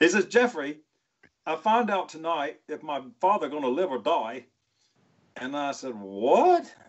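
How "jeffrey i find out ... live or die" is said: put-on Australian accent. Retelling what Matt told him that afternoon, imitating Matt's Australian accent. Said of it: "in his Australian voice".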